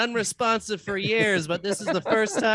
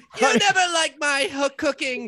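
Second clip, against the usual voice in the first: high-pitched, screaming voice; 6 semitones higher than usual. Playing a wife in an improv scene, yelling at her husband: wife screaming. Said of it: "His wife is screaming at him".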